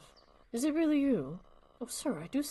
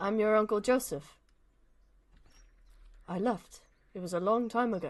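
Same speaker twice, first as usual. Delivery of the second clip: put-on British accent. Speaking to someone who doesn't recognize him, as Uncle Joseph, put-on British accent. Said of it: "I'm gonna be British for a minute".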